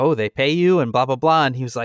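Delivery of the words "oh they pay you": normal talking voice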